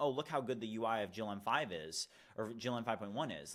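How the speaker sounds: normal talking voice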